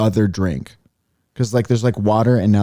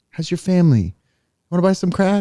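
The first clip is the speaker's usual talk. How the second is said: put-on nice, friendly voice, higher pitch; 9 semitones higher than usual. Retelling a comedian's joke about a nice crack dealer: Will Ferrell impression. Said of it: "It's a Will Ferrell joke. he's like".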